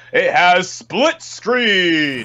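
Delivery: slow, high-pitched announcer voice, word by word. Joking about a game feature: Smash announcer voice. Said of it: "you sounded like that announcer from Smash".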